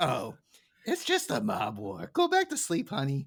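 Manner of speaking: breezy, casual, lightly sing-song, offhand. Retelling how Marge answers the sleepy children: imitating Marge very casually. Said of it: "Marge is like, very casually, so casually".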